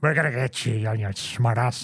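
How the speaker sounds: sloppy, mumbled, browbeating voice. Imitating a wrestling manager's mumbled promo: Mister Fuji impression. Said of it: "I can't even do the Fuji".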